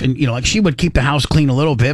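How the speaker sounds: normal talking voice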